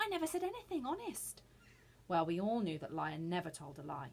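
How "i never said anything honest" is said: terrified, frightened whisper, much higher. Narrator reading a character denying he spoke, in a terrified whisper. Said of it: "he whispered, terrified".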